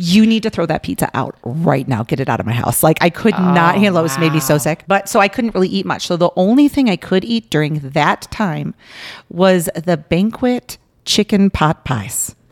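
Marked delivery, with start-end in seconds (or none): 0.0-2.8 deep, possessed, demonic devil voice. Retelling smelling garlic pizza from upstairs, speaker orders Nick to toss it in a devil voice. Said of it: "in my most devil voice".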